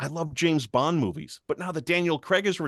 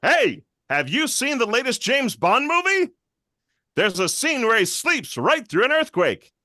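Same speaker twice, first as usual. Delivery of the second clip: loud, confident, pitched-up delivery; 7 semitones higher, 5 dB louder than usual. Building one impression out of another, John Mulaney impression, loud and confident. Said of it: "make him a little louder and a lot more confident".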